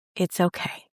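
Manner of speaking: plain, flat, uncoloured, very neutral even tone. Demonstrating a phrase repeated to oneself, very neutral tone. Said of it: "I've been saying in a very neutral tone".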